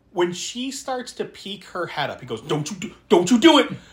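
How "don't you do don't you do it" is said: put-on, yelled pleading tone. Retelling how a moviegoer reacted to a scene: imitating a man yelling at the screen. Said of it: "And he's yelling the whole time".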